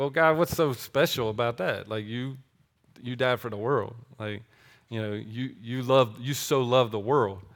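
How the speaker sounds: heavy, dry sarcasm. Retelling own past prayer to God: imitating own sarcastic remark. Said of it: "in my sarcasticness said".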